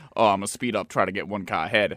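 ordinary delivery

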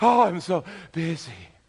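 winded, puffing, breathless, very slow. Imitating someone asked how they are doing: imitating someone out of breath. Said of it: "you sound like you just ran up a flight of stairs".

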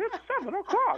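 very high little cartoon mouse voice. Describing what the watch says when you tap it, in a Mickey Mouse voice. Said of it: "In the voice of Mickey Mouse".

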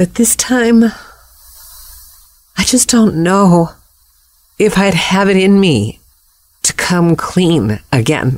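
voice quavering and shaking throughout. A podcast host talks about their past writing, voice shaking. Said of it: "My voice is shaking just thinking about it".

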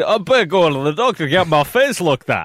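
put-on voice of a large, hefty Scottish man, Scottish accent. Retelling what she said to the other speaker, in a large Scotsman voice. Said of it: "she sounds exactly like a large Scotsman".

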